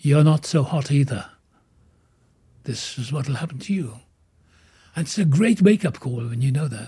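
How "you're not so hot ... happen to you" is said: usual speaking voice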